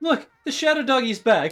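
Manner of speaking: high, loud, giddy celebratory cheer.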